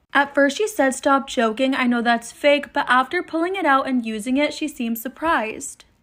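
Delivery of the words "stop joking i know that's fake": usual speaking voice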